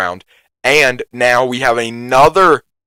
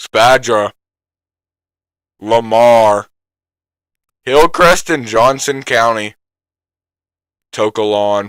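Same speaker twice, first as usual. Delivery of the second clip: slow, careful reading voice. Reading out a list of town names, reading slowly. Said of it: "I'm gonna read it slowly".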